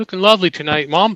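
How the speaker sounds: subtle put-on English accent. Fulfilling a request to compliment one's mom, in an English accent. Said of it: "Compliment your mom in an English accent".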